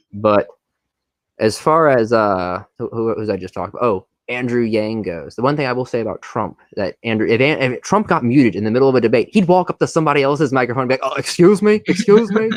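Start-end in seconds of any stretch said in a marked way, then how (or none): 11.1-12.5 put-on old politician voice, higher and louder. Acting out Trump grabbing another debater's mic, Bernie Sanders impression. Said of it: "I'm using a Bernie impression for Trump".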